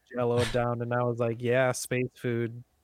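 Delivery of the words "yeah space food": mock, dry, unimpressed eye-rolling sarcasm. Retelling an eye-rolling reaction to the robot serving Jell-O: sarcastic remark. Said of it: "Kinda rolled my eyes".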